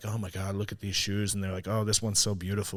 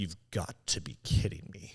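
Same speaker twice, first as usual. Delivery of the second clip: mock-angry woman voice, disbelieving, quieter; 4 dB quieter than usual. Retelling a woman's reaction to Payless shoes, imitating a pissed-off woman. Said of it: "she was all pissed off".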